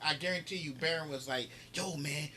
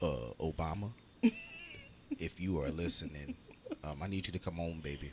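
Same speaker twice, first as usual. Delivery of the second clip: very low voice that swoops; 12 semitones lower than usual.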